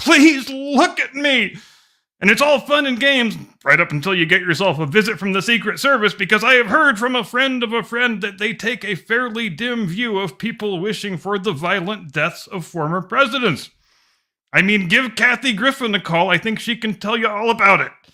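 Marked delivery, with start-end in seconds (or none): 0.0-1.6 high mock desperate scream, like a screaming old crank. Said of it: "bitter, insecure man screaming".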